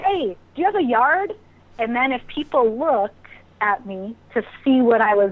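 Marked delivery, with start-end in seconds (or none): 0.0-1.3 put-on, high-pitched, repeated yelling. Retelling calling out to people at a farmer's market: imitating own past yelling. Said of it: "I yelled".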